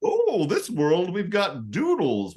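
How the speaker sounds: mock scientist voice, high, slow, sing-song, drawn out.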